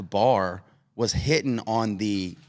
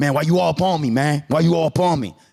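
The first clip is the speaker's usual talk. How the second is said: put-on aggrieved anger, loud and pitched up; 5 semitones higher, 5 dB louder than usual. Retelling a flight story, imitating an angry passenger: imitating an angry passenger. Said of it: "he was like".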